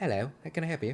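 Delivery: attempted standard British accent. Speaker showing their attempt at a regular British voice. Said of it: "I can't do a regular British voice".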